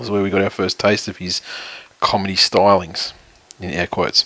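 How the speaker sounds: low, flat, unvaried one-note monotone. Describing where audiences first saw a famous TV man's son, monotone. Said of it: "that was your most monotone".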